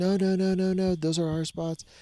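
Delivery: mock very high-pitched yelling. Retelling how a camper protested about the campsite spots: imitating a woman yelling. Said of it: "the lady starts yelling".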